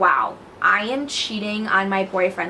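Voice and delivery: ordinary talk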